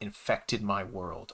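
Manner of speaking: plain reading voice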